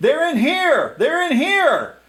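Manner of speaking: loud, very high calling voice. Narrating a scene where the servant reappears and is calling out to the guards. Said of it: "calls out to the guards".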